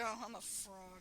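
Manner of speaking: mock very quiet, slow, crestfallen and dejected. Quoting an actor's ad lib, imitating Johnny Yong Bosch sounding disappointed. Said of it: "He actually sounds disappointed, like".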